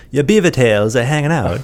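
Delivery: put-on Swedish accent on every word, loud and high. Retelling what teammates in Sweden said about a mullet: imitating a Swedish accent. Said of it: "in, like, a Swedish accent".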